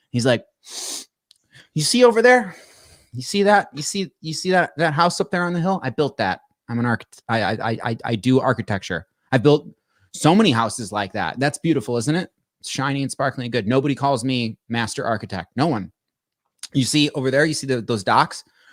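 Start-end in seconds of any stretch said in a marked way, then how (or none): none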